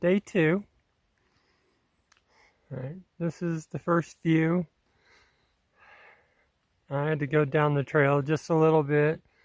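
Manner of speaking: winded, out of breath. Speaker greets everyone on day two at the first view, out of breath. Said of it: "so I sound out of breath".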